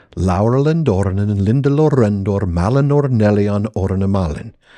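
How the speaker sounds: ordinary talk, nothing marked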